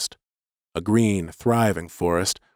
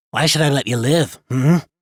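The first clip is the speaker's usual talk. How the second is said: loud, throaty, guttural rasp; 5 semitones higher, 5 dB louder than usual. A voice rasps close in the narrator's ear, guttural rasping voice. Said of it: "a guttural voice rasped in my ear".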